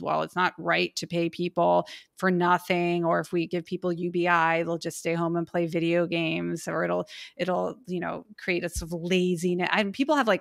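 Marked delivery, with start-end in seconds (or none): none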